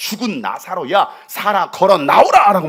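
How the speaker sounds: loud, slow, commanding call.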